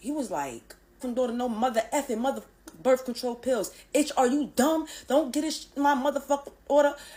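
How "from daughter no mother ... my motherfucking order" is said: furious, enraged cursing rant. Retelling a father cursing out the school nurse: imitating an angry cursing-out. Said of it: "my father cursed Abby the fuck out".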